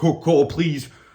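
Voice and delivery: confident, self-assured, no-doubt delivery. Retelling how he asked for a Coca Cola, imitating someone confident. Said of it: "he says it so confidently".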